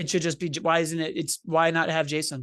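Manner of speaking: ordinary talk, nothing marked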